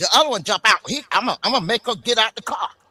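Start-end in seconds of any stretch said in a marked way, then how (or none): 1.1-2.7 brash, cocky, swaggering cop voice full of attitude. Imitating an officer who jumped out of the truck: imitating a cocky officer. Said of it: "he already had a cocky attitude".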